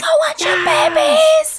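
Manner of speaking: very high, drawn-out, adoring fan squeal. Imagining fans at an awards stage: imitating screaming fans. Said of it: "they're screaming".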